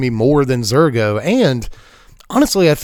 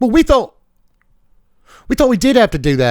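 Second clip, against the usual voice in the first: higher-pitched, put-on fake British accent; 7 semitones higher than usual. Voicing characters in a silly made-up scene about a game card, in a fake British accent. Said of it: "I keep doing the British thing today".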